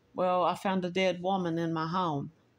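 ordinary delivery

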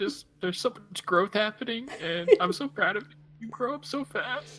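put-on tearful blubbering, very high. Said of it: "are you crying?".

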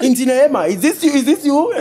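high, loud, thrilled, excited shouting.

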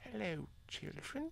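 very soft, very quiet whisper. Told to whisper, speaker starts a bedtime story for children: whispering. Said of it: "you have to whisper".

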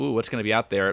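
ordinary delivery

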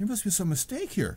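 stunned, shocked disbelief, half-joking. Retelling a wife's reply to a church leader giving her husband a calling, in mock shock. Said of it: "in kind of a shock and a jest".

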